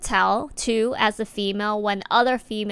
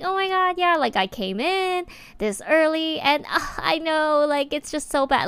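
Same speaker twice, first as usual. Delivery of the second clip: put-on, pitched-up, casual chatty joking voice; 6 semitones higher than usual. Speaker shows how she jokes around with coworkers: higher-pitched joking voice. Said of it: "you could tell that tone right there went higher, like at least one octave".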